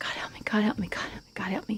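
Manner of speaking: hushed, mumbled mutter under the breath to oneself. Recounting a passenger clutching his chest in the car, imitating muttering under breath. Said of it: "he's saying under his breath".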